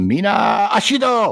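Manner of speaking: shrill, very high-pitched loud yell. Yelling a character's activation phrase while attacking in the game: yelled activation phrase. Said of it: "I'm going to yell the activation phrase".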